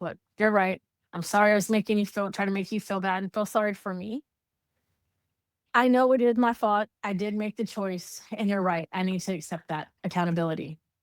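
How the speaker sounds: plain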